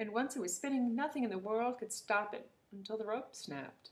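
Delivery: plain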